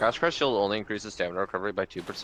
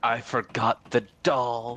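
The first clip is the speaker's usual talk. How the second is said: put-on screaming voice; 3 semitones higher, 4 dB louder than usual. Retelling a famous challenge-run video moment: imitating someone screaming. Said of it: "so he just screams like".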